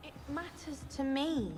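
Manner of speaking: taking offense. Telling the other person it matters to you, sounding offended. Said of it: "you sound offended".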